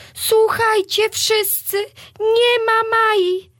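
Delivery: very high-pitched, shrill, frightened cry. Wiola, back from Maja's room, exclaims to everyone in fright. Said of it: "wykrzyknęła przerażona Wiola".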